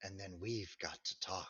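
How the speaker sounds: voice dropping low and quiet. A narrator voices a woman approaching the group; voice falling as she approaches. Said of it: "Her voice falls as she approaches".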